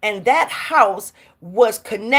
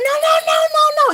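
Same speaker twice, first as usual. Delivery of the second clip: mock man's scream, higher; 4 dB louder than usual. Retelling a scary moment to friends, acting out what the man in front shouted at the speaker, as an imitation of screaming. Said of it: "He's screaming at me".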